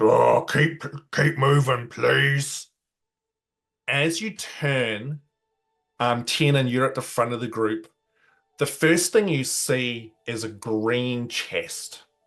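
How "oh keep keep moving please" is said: very gruff, rough put-on voice. Describing a scene, the speaker voices someone beside the listener in a very gruff voice. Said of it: "this very gruff voice beside you just goes".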